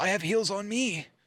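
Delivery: anime protagonist-style heroine voice. Retelling what she said while you played Fortnite together, imitating her anime protagonist voice. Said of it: "She sounds like a protagonist in an anime".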